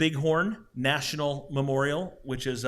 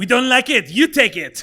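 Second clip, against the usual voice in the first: clumsy, bad, fake put-on French accent; 9 semitones higher, 12 dB louder than usual. Speaker acts out the French giving away the Statue of Liberty, in a bad French accent. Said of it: "That's a bad French accent".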